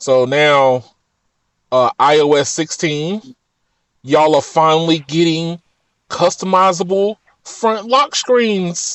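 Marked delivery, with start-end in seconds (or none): 2.0-9.0 plainly sarcastic tone of voice. Telling others they are finally getting a new feature: sarcastic tone. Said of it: "if you hear sarcasm in my voice".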